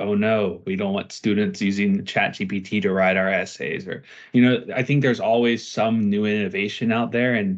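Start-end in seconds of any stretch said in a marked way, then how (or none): none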